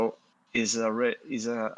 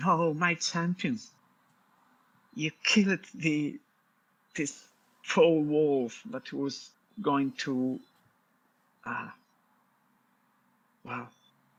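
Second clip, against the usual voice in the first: sobbing through the words, high and tearful; 5 semitones higher than usual. Playing a character hugging her rescuer after a wolf fight: acted crying. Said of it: "crying again".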